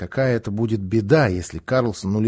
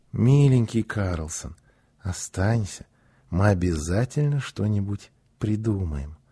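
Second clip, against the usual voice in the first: gentle, affectionate, tender voice, low; 4 semitones lower, 4 dB quieter than usual. Narrator reads a character asking another to stay after stroking his head; tender, affectionate request. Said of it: "ласково попросила".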